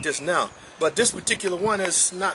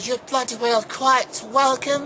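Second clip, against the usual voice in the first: fake British accent with raised pitch; 7 semitones higher than usual. Replying to thanks and signing off, in a put-on British accent. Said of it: "I'll say this in my British accent".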